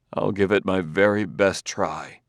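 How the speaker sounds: ordinary delivery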